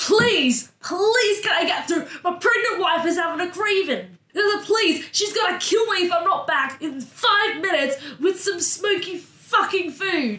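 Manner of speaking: shouting. A player's character pushes through a crowded market street, yelling. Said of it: "Georgia starts yelling".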